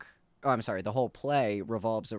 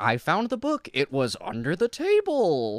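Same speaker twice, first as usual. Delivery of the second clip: high-pitched, loud, relieved tone. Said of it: "someone is finally like".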